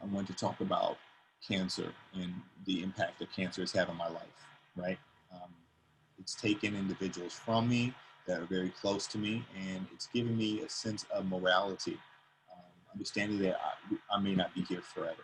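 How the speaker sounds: grave, somber, low and very quiet hushed voice. Demonstrating kinds of speaking tone to listeners, the speaker uses a somber tone. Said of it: "That's a somber tone".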